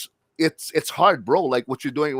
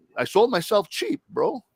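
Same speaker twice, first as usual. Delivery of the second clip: emotional voice, full of feeling, pitched up; 7 semitones higher than usual. Opening up about something you have never talked about in public, sounding emotional. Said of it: "if I sound emotional".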